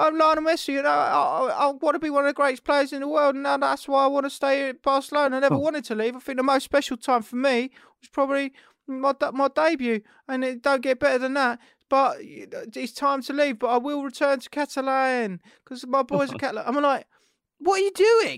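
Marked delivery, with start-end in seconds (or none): 0.0-16.6 put-on passionate voice, much higher pitch. Imitating the voice put on for Lionel Messi, a mock passionate Lionel Messi voice. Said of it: "them trying to put on the passionate voice".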